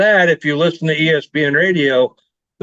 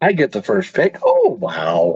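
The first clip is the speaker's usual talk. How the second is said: mocking, sarcastic delivery; 2 semitones higher than usual. Offered the first pick, responding to the offer: sarcastic. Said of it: "just sounding so sarcastic".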